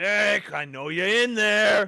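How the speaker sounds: really gruff, rough, very loud, high bark. Narrating to the players, an unseen figure calls out to a hiding character, really gruff voice. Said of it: "You hear in a really gruff voice".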